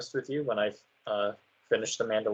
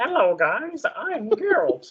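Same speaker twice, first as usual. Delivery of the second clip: silly puppet-like voice, higher; 13 semitones higher than usual. Joking about a wrong voice for Geralt: Kermit the Frog voice. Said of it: "Like a whole Kermit the Frog sounding ass".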